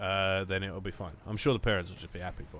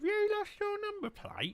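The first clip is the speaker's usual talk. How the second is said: very high, swooping, sing-song mum voice. Retelling being asked about a lost number plate: impression of mum. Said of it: "that's my impression".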